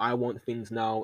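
ordinary talk, nothing marked

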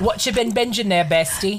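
put-on English accent. Co-host suggests saying the segment name in an English accent; speaker does it. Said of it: "I think you should do that with an English accent".

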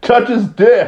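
put-on shrill, high-pitched little boy's holler. Retelling a wrestling match where a boy in the crowd yells; imitating a boy yelling. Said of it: "and he just yells".

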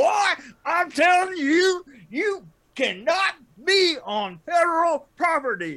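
loud, very high cartoon rooster voice. Retelling what a man in a park ranger outfit said, Foghorn Leghorn voice. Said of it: "this guy sounded like every who's the rooster in Foghorn Leghorn".

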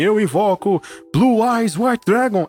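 put-on anime-style duelist shouting. Retelling how anime duelists summon cards: imitating anime duelists shouting. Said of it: "eles sempre gritavam".

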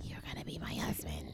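quiet, low whispering.

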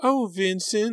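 very high, gushing, swooning, lovesick voice. Sarah teases her sister Delia, mocking high, swooning voice. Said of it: "Sarah mimicked in a high, swooning voice".

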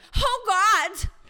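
loud, high-pitched shout of disgust and revulsion. Retelling a film scene where a woman shouts in disgust: imitating a disgusted shout. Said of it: "com uma cara de nojo grita".

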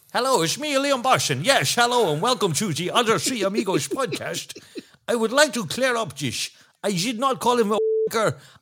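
put-on very high, muddled German-Belgian-Chinese blended accent. Pretending to be Liam Bossin on the podcast, speak in a muddled German-Belgian-Chinese accent. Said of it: "I'm talking kind of German and Belgian and Chinese".

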